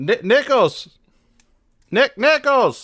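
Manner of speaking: high-pitched voice calling out. In an acted scene, calling to a man outside: yelling out a door. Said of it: "I'm yelling out the door".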